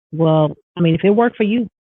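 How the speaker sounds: ordinary talk, nothing marked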